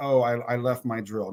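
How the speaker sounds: slow, embarrassed, sheepish delivery. The speaker retells walking back in after figuring it out, retelling a sheepish remark. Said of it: "I sheepishly say".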